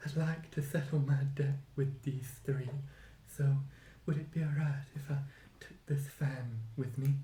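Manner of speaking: muttering under breath. Narrator voices her at the last roll of bones, muttering under her breath. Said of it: "she mutters under her breath".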